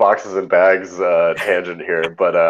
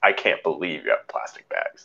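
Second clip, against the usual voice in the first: mock disdainful tone, quieter; 2 semitones lower, 7 dB quieter than usual. Retelling how a customer looked at the plastic bags: imitating a disdainful tone. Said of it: "with disdain".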